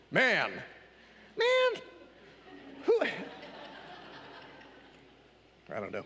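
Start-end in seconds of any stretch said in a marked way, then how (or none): 0.2-3.0 very high, stunned, shocked disbelief. Explaining a passage in Luke, the speaker acts out Jesus's reply, mock-shocked Jesus voice. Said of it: "That's my Jesus shocked voice".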